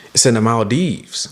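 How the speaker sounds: thrilled, excited, eager, keen tone. Retelling a friend's group chat message about a trip: imitating an excited friend. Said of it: "He's excited".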